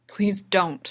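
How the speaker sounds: unintentionally harsh. Hera answers Kanan's question, harsher than intended. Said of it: "it comes out harsher than she intends".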